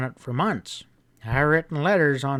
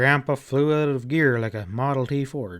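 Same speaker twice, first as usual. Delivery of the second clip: usual speaking voice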